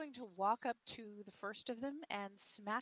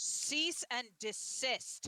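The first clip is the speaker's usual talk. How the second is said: grand, booming, declaimed stentorian voice; 5 dB louder than usual. Voicing a character ordering brawlers to stop: booming Stentorian voice. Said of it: "puts on her best Stentorian voice".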